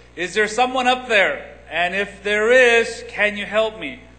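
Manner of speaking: very loud, high-pitched yelling cry. Telling a story of a man holding on for dear life, yelling loudly up to heaven. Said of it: "he yells in a loud voice".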